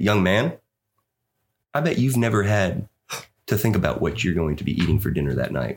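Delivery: put-on quiet, condescending tone. Retelling what a man said when asked about food: imitating a quiet condescending tone. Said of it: "he got kinda quiet and he got kinda condescending with me".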